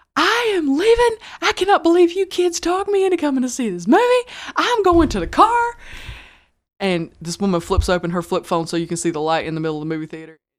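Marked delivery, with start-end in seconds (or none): 0.1-5.7 furious, shrill angry yelling, pitched way up high. Telling about women walking out of a movie theater, imitating them yelling. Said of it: "They jump up and start yelling".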